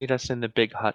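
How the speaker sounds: very quiet, soft-spoken seagull murmur. Narrating a seagull that flies down and speaks to Lady B, very quietly. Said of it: "very quietly says".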